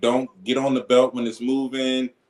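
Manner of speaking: usual speaking voice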